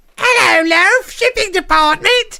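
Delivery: grating, very high, very loud, harsh screech, slow. Answering a transferred call as the shipping department: harsh shrill voice. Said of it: "that's a harsh sounding voice".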